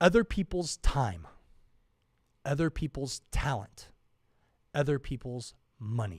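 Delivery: very slow speech. Speaker explaining a three-part formula to the audience, speaking really slowly. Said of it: "really slow because I want you to get it".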